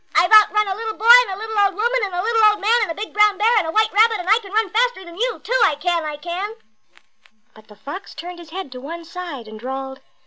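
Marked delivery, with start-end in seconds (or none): 0.2-6.6 high, laughing, calling out through a laugh. Narrator reads the gingerbread boy answering a fox; laughing, calling out. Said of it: "The gingerbread boy laughed and called out".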